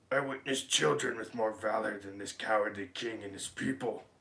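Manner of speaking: devilish demon voice. Narrator reads a story aloud, voicing the greatest of the devils: demon voice. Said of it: "That's my demon voice".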